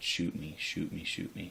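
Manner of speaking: usual speaking voice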